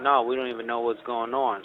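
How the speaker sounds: plain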